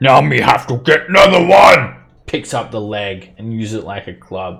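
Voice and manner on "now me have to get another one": very loud, shrill, furious ogre yell. Voicing an angry ogre who lost his leg: angry ogre voice. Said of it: "he looks very, very angry".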